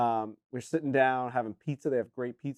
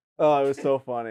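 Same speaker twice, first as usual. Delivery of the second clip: normal talking voice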